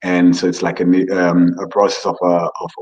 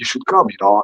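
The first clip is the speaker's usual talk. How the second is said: imitated screaming shout; 3 semitones higher than usual. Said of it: "he's screaming, he had a megaphone".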